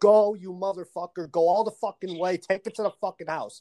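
put-on, acted-out scream. Retelling what you screamed after a pick six, retelling own scream. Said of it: "I actually screamed".

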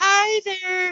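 lightly camp voice, very high pitch. Imitating how an author talks: slightly camp voice. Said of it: "he talks a bit like a kinda slightly".

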